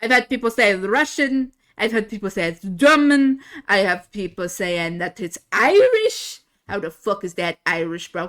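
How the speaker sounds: loud, very thick put-on Russian accent. Speaker shows the accent people call Russian, German or Irish: very thick accent. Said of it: "I can go into a very thick accent like this".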